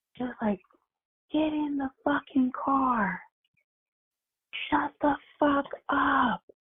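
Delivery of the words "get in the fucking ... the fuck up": very high, drawn-out, top-of-lungs screaming. Recounting a woman screaming at a baby, imitating her screaming. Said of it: "screaming at him like to the top of her lungs".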